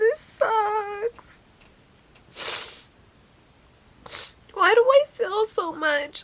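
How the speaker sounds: sobbing, crying, voice breaking. Speaker can't stop crying and doesn't know why, crying hard. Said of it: "I don't know why I'm crying so fucking hard".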